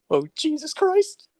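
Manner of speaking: high, slow, horrified groan. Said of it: "you're like".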